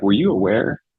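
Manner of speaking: worried, caring, concerned tone. Showing the tone for a question about a limited timeline: concerned. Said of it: "a concerned tone. So you got to be concerned".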